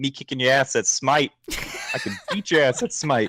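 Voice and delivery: goading, bragging, swooping sing-song taunt. Retelling a friend provoking them over a game: imitating John taunting. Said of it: "He's like".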